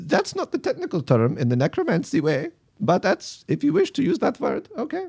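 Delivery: put-on very high Italian accent, swooping up and down. Voicing Albertini correcting a player's word: Albertini's Italian accent. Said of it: "Maintain my accent".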